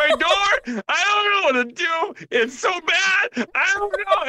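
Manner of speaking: mock weepy crying, pitched very high. Complaining about a video of a woman holding a baby: imitating a woman crying. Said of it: "just crying like".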